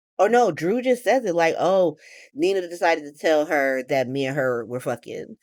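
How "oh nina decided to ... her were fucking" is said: ordinary talk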